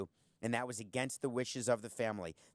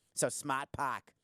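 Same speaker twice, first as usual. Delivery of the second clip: put-on Boston accent, slower. Trying to say a Hyundai feature name, in a Boston accent. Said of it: "the only word I can say with Boston accent is park".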